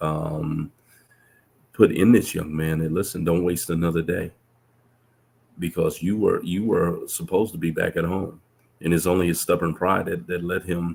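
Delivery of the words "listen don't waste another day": plain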